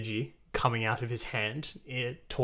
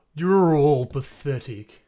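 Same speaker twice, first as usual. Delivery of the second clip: booming, loud, mocking taunt, louder; 3 semitones higher, 11 dB louder than usual. Voicing the big dude mocking the party: booming mocking shout. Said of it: "coming out as, like, a booming voice".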